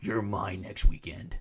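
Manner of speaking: put-on demonic voice. Speaker retells what she told him about next weekend, in a demon voice. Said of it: "with a demon voice".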